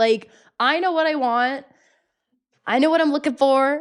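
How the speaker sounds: upset, high, heated yelling. Venting to another speaker about being tired of pretending: yelling. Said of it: "Why are you yelling?".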